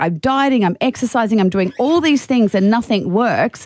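ordinary talk, nothing marked

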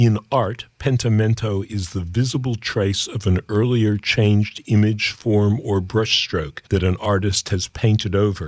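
ordinary talk

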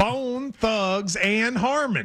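rural mountain-folk accent. Asked why they say the band name that way, demonstrating: mountain country accent. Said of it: "that's the mountain way of saying it".

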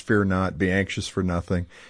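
ordinary talk, nothing marked

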